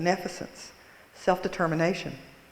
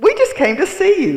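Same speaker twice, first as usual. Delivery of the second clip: squeaked, high-pitched and loud; 8 semitones higher, 15 dB louder than usual. Retelling what a companion said when asked why they came, in a Minnie Mouse voice. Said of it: "in her Minnie Mouse voice".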